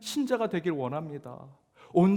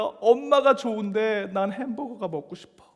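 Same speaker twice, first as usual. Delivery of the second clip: acted-out little kid voice, tearful and sobbing; 4 semitones higher, 4 dB louder than usual. Retelling a child begging his mother for a hamburger: imitating a child crying. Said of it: "막 울면서 얘기합니다".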